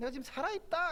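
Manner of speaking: high, ringing cry.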